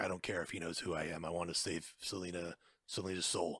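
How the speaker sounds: deep, dramatic voice. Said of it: "better Batman voice".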